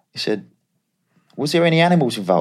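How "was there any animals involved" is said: put-on raised, high Australian accent, plain delivery. Retelling his agent's phone call about the videos, imitating Scott's Australian accent. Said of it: "he's Australian, it's quite funny".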